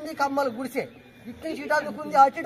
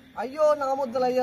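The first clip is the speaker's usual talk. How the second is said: plain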